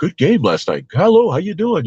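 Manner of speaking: high, loud, eager, fawning fan voice.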